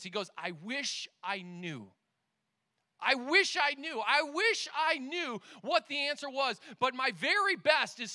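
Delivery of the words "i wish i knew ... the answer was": play-acted, helpless, desperate, pleading repetition. Retelling an interview answer, acting out Tom Brady's desperate reply. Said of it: "with desperation in his face and in his voice".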